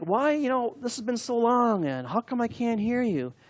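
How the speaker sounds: high, whiny, drawn-in pleading voice. Retelling praying to the Lord about long silence, imitating own whining. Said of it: "So I was whining, like".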